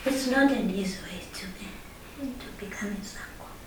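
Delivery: quick, quiet whisper.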